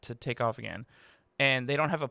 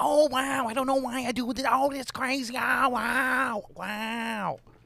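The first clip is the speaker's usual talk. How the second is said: mocking, very high, squeaky, slow, drawn-out "wow"; 12 semitones higher than usual. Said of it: "She's like".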